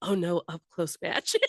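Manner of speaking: put-on whisper to oneself. Recalling a scene she watched, she retells what she whispered to herself: retelling a whisper. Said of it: "I did whisper to myself".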